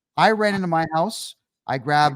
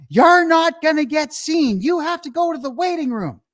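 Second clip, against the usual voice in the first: put-on very high-pitched scream; 11 semitones higher, 4 dB louder than usual. Recalling fragments of a day when a nurse yelled at the speaker; imitating a nurse screaming. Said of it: "she was screaming at me".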